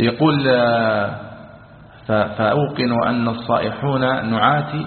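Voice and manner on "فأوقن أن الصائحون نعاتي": usual speaking voice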